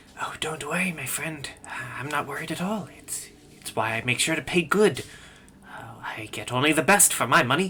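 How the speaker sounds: hushed whisper under the breath. The merchant whispers back reassurance to his companion, whispering. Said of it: "He whispers back".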